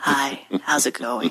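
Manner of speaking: low, subtle, understated voice. Imitating a cartoon character's voice that gets lower: low subtle Trent voice. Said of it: "nice, low, subtle".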